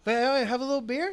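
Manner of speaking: put-on playful teasing voice. Retelling what Hillary says when she comes home, imitating Hillary's playful teasing. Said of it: "a playful, silly, like, jokingly ripping on me way".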